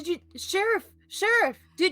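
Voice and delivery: very high, very loud, shrill, stammering, flustered yelling. Calling out to the sheriff, who asks why he keeps yelling: yelling.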